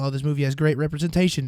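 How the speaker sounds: ordinary talk, nothing marked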